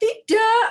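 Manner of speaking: loud angry high no. Explaining how not to say tidak, the speaker shows angry tone on tidak. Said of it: "dengan nada marah".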